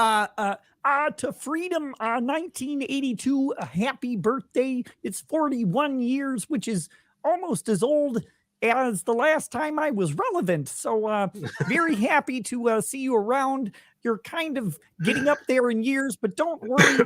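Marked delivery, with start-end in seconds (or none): 1.1-17.0 high, cartoon frog puppet voice. Giving a viewer a requested birthday toast: Kermit the Frog voice. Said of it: "give me a toast to my forty-first birthday in Kermit's voice".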